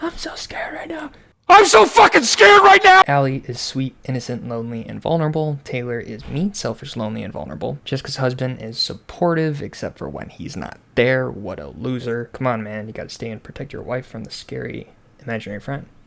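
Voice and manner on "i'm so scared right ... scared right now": put-on, very high, shrill, panicked shouting. Playing a scary game while freaking out, doing a Will Ferrell impression. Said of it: "I feel like Will Ferrell".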